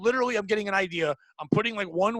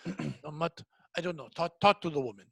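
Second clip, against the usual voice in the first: put-on Eastern European accent; 4 semitones lower, 5 dB quieter than usual. Retelling a coworker asking for help: imitating a coworker's Eastern European accent. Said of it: "that, like, Dracula accent".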